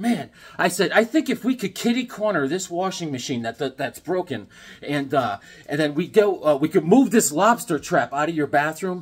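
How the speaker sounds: ordinary delivery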